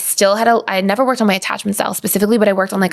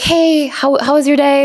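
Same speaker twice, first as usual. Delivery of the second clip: warm, friendly, slow, slightly pitched-up acted tone; 5 semitones higher, 3 dB louder than usual. Retelling greeting a partner at home after work: imitating own warm greeting. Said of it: "you know, all warm".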